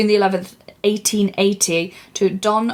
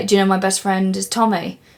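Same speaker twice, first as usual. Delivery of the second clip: usual speaking voice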